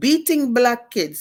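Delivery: clumsy fake Russian accent. Retelling what a Russian woman said about the speaker's book, in a bad Russian accent. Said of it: "I can't do the accent good".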